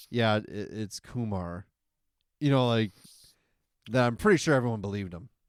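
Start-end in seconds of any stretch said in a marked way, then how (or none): 0.1-1.6 mock bored, low, utterly dull, very slow delivery. Retelling how a friend said his fake name: imitating a bored tone. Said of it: "boring, like, tone".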